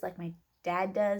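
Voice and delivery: ordinary talk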